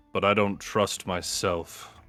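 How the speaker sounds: muttered quietly under the breath. Voicing a character's quiet aside after taking the stone: under the breath. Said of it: "and then under my breath".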